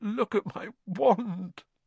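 trembling voice. Reading Ron's words to Harry after his groan, in a shaky voice. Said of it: "said Ron in a shaky voice".

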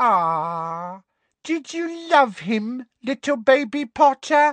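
very high mocking baby talk, "ah" drawn out. Reading a villain taunting the hero in a mocking baby voice. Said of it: "mock baby voice".

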